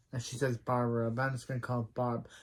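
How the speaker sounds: plain reading voice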